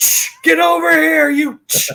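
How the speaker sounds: loud, rough, creaky, failed yell on Ch. Imitating a dad who tries to yell at his son: mock yelling. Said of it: "he can't yell Ch".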